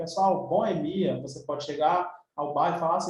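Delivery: normal talking voice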